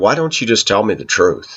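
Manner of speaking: plain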